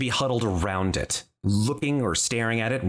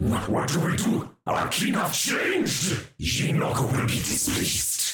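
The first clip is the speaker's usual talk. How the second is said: harsh, angry creature voice, demon-like; 8 semitones higher than usual. Game master voicing a creature speaking angrily to another, in a harsh voice. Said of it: "One of them says in a harsh voice".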